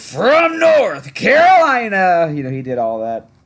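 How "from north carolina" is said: loud, belted announcer call, pitched very high. Doing the famous Bulls player introduction: Tommy Edwards impression. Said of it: "my better Tommy Edwards impression".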